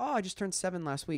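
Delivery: ordinary talk, nothing marked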